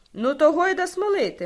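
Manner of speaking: put-on loud, high, childlike cheer of delight. Rustamchik adds his reply to his friend Sloboda, with almost childlike joy. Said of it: "майже з дитячою радістю додав Рустамчик".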